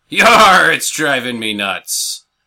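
put-on swashbuckling pirate voice on "yar". Telling a joke, quoting the pirate's punchline in a pirate voice. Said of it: "The pirate goes".

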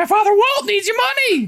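very high-pitched cartoon mouse voice. Asked to say something Mickey would say, the speaker does a Mickey voice. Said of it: "Say some Mickey".

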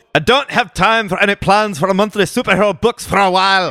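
bad high Scottish accent. Reading out Morrison's interview quote, in a bad Morrison impression, Scottish accent. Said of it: "That was the worst Scottish accent ever".

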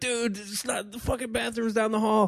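put-on, very high, screamed yell. Telling how they screamed at a blacked-out guy who thought he was in the bathroom, retelling a scream. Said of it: "I screamed out".

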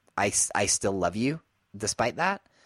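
ordinary talk

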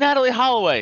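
acted-out high crowd shout, all together. Retelling a comedy bit, imitating the audience: imitating a crowd yelling. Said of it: "everyone yells out".

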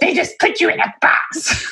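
dismissive voice, done for laughs. Imitating a husband complaining about personality tests: Bill impression. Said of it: "Do y'all like my Bill impression?".

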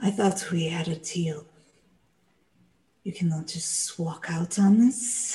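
snake-like, snaky voice. Something holding the door shut speaks once more, in a snaky voice. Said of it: "you would hear that snaky voice".

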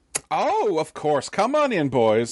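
put-on high-pitched voice of an older woman. Voicing a woman who answers the door to FBI agents, older woman voice. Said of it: "and there's an older woman".

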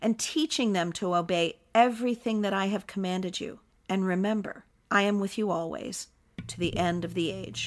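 usual speaking voice

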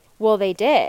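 mock deadpan, matter-of-fact, unjoking delivery. Student retelling how her conspiracy-theorist math professor answered, imitating a deadpan reply. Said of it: "he just gets totally deadpan".

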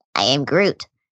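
sweet, cute tiny-creature voice. Quoting a commercial line about insurance: Baby Groot voice. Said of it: "That, that, that wasn't too bad".

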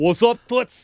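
put-on New York accent. Recalling the character voice she asked about, speaker repeats it: New York accent. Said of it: "it was like a New York kind of thing".

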